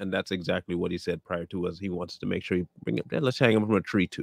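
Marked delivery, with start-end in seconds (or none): none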